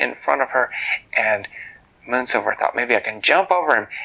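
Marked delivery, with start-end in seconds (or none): none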